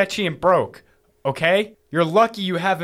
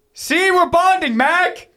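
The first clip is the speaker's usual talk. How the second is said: very high-pitched, loud yelling; 13 semitones higher, 4 dB louder than usual. Calling out to mac just after a truce has been agreed, yelling. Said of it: "Stop yelling!".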